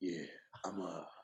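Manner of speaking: very low, very quiet, hushed whisper. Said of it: "with that whisper".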